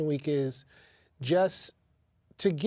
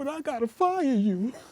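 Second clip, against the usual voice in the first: put-on, very high, near-tearful, almost crying voice; 10 semitones higher than usual. Retelling being fired after talk in an elevator, imitating Gwen almost crying. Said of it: "Gwen was all sad, almost crying".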